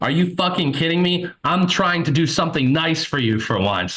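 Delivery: acted, high-pitched exasperated outburst, losing it. Retelling what a friend with crashing blood sugar said: imitating someone losing his mind. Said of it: "he's losing his mind".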